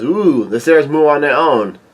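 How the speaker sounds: plain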